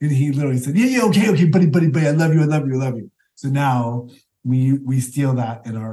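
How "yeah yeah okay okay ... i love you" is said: angry, annoyed, heated delivery. Retelling a fight after dance class, imitating Jeffrey angrily. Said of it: "He was so angry".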